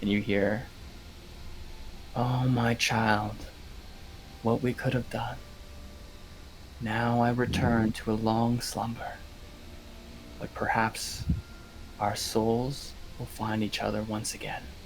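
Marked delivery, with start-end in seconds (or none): 2.1-14.6 barely audible, faint, hushed murmur. Narrating the scene as the mark fades, voicing the parting words in a faint voice. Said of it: "faintest voice".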